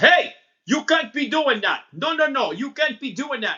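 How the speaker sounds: put-on accent from the Middle East. Retelling what a tall German cop told the speaker at fifteen, in a Middle Eastern accent. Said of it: "making this cop sound like he's Middle Eastern".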